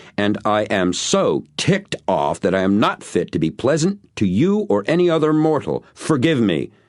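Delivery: strong, dramatic, venomous, loud outburst with rising pitch. Reading a story where a character suddenly turns angry: loud, strong, venomous voice. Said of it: "changed her voice to loud and strong to the point of venomous".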